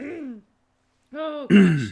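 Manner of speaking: very loud, breaking into laughter. Reacting to a joke about a nickname, laughing while talking. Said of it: "I can't stop laughing".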